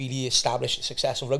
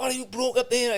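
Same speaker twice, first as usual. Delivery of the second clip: play-acted, high-pitched screaming cry; 11 semitones higher than usual. Retelling a fight on the landing, a woman shouts at the fighters, imitating someone screaming. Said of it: "And she's screaming".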